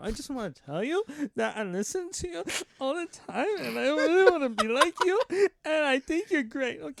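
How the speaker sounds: sobbing, high, tearful, gushing crying voice. Telling someone he listens to all the time that he admires him, crying while speaking. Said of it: "I'm crying right here".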